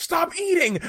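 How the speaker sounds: very high, shrill, fed-up yell. Recalling wanting to yell across the kitchen at someone eating, retelling a yell. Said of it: "I wanted to yell across the room".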